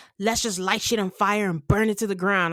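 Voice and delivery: put-on hyped-up tone. Retelling a cast member's hyped-up line about burning it all down: imitating someone hyped up. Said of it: "she gets all, you know, hypey and is like".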